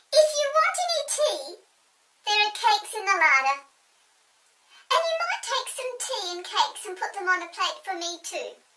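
very high, loud, swooping quacking voice. Narrator voicing the duck-headed Snoogle in a story, Snoogle's quacking voice. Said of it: "said the quacking voice of the duck-headed Snoogle".

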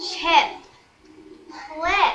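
very slow, drawn out word by word. Told to just say it slow, the speaker finally does: very slow. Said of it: "Just say it slow".

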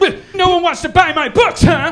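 frustrated, ranting delivery. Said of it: "in her frustration".

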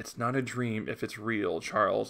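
normal talking voice

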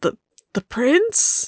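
flinching, startled surprise. A game master voices a man grabbed by the collar, wincing surprised question. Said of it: "he winces".

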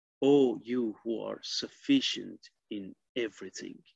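ordinary talk

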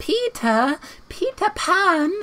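put-on very high little girl voice. Playing through a game and finding a character, voicing her in a Wendy voice. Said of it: "That's my Wendy voice".

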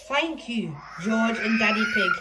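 usual speaking voice

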